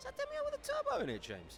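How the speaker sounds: put-on high-pitched voice. Speaker does their own high-pitched voice for one line: high-pitched put-on voice. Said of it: "That's me doing my high pitched voice".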